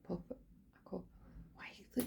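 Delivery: whisper, fumbling over words.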